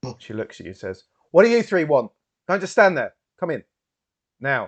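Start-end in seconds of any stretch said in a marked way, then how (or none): 1.3-4.7 very loud, high, commanding sergeant's bark. Narrator voicing a uniformed woman addressing three visitors: sergeant's voice. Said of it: "using a very sergeant's voice".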